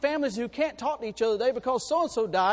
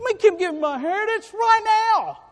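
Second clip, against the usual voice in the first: put-on small, high, two-year-old toddler voice; 9 semitones higher, 4 dB louder than usual. Acting out a young man's prayer for his inheritance, in a two-year-old voice. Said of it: "Doesn't he sound like a little two-year-old?".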